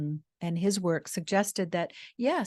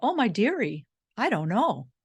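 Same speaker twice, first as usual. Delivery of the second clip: Scottish brogue with voice raised; 3 semitones higher, 5 dB louder than usual. Retelling a spiritual teacher's answer to the speaker, in Sid's Scottish brogue. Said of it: "in his co Scottish brogue".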